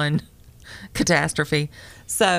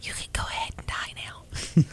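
soft, hushed, evil whisper. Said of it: "I just whisper evil things to it".

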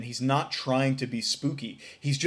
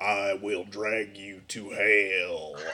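spooky voice, very slow, deep, drawn out; 6 semitones lower than usual. Describing the classic Undertaker promo, spooky Undertaker voice. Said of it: "he does his spooky voice".

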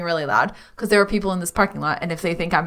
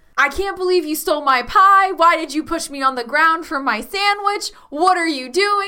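very high, screamed words; 9 semitones higher, 3 dB louder than usual. Playing a character screaming ridiculous things in a parking lot: screaming nonsense in character. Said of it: "I start screaming ridiculous things".

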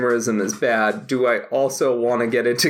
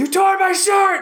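put-on very high, shrill angry yell; 3 dB louder than usual. Retelling a film scene, quoting Nicolas Cage: imitating Nicolas Cage yelling. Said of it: "he's yelling about the fucking shirt".

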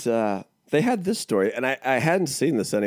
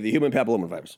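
said fast, rushed, lower pitch; 3 semitones lower than usual. Rushing past a word the speaker keeps mispronouncing, said fast. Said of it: "I just said it fast that time".

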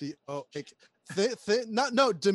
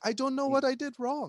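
put-on heavy Israeli accent, higher pitch; 8 semitones higher than usual. Imitating an actress playing Wonder Woman: Gal Gadot's Israeli accent. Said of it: "with that heavy Israeli accent".

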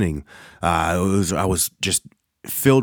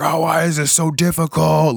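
mock exasperated scream, high and frustrated; 9 semitones higher, 3 dB louder than usual. Recounting struggling with a COVID test kit, retelling a frustrated scream. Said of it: "just screaming like".

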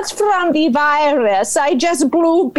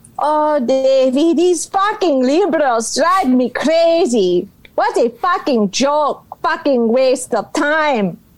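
put-on lady voice. Answering a host's questions as the First Lady: Melania Trump impression. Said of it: "Please welcome the First Lady of the United States, Melania Trump".

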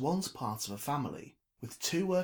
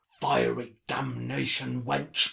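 growled out, growling; 6 dB louder than usual. A narrator reads Trevor's outburst after he strikes the bar: growled. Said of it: "he growled".

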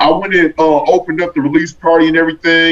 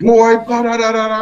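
mock screaming, much higher pitch; 5 semitones higher than usual. Retelling a phone call from Mom, imitating her screaming. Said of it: "she's just screaming in the phone".

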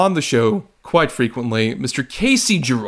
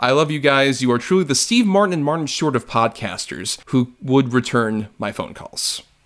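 usual speaking voice

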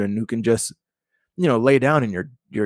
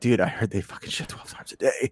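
grave, serious, hushed whisper; 2 semitones lower, 7 dB quieter than usual. Teasing the listener about their future kid, the speaker imitates Dan's serious tone. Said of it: "This is like serious tone".

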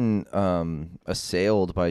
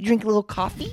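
put-on kid voice, fake-nice and menacing, higher; 14 semitones higher than usual. Retelling a kid on a bike talking to a walker: imitating a kid, nice but menacing. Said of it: "nice, but in, like, a menacing way".

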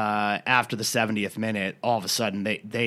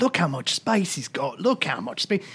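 complaining, pitched-up, grumbling English football pundit voice; 7 semitones higher than usual. Imitating a pundit complaining on Match of the Day: imitating Alan Shearer complaining. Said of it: "Is that a generic English accent, or is that your Alan Shearer?".

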